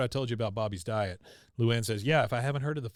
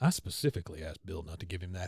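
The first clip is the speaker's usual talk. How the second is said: put-on mutter, lower and quieter; 6 semitones lower, 4 dB quieter than usual. Retelling a scene where Bobby shuffles off, imitating Hank muttering. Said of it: "Hank just kinda mutters".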